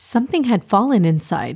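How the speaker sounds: ordinary delivery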